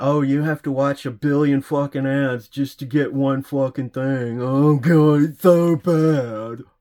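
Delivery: sarcastic, loud, drawn-out whining. Retelling how the other speaker keeps complaining about ads: mocking imitation of harping complaint. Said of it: "he's still harping on".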